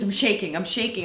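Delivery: normal talking voice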